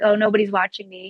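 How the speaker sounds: ordinary talk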